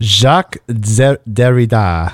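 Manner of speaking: put-on French accent, mock French pronunciation. Asking the other speaker how to pronounce a philosopher's name, try a french accent. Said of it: "like a French accent?".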